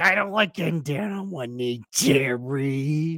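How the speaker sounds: complaining tone with the name stretched and drawn out. Acting out a sitcom scene about a proposal: George Costanza impression. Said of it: "That's such a good impression".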